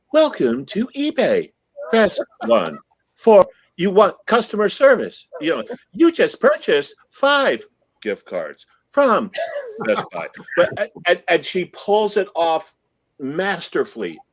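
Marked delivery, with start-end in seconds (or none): 0.1-10.2 high, swooping, automated phone-menu recording voice. Showing how a voice actress imitates automatic voice machines, imitating an automated phone voice. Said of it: "she can imitate automatic voice machines".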